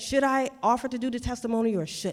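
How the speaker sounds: normal talking voice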